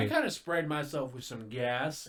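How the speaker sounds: normal talking voice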